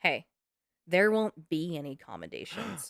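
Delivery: very quiet, understated, low-key delivery. Retelling what the captain said after the case closed: imitating someone speaking very quietly. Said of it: "very quietly".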